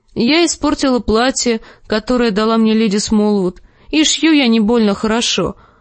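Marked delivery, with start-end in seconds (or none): none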